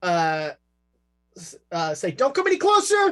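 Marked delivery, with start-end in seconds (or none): 2.1-3.1 very high-pitched woman's voice. Voicing a woman behind a school door: woman's voice. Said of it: "you hear a woman's voice".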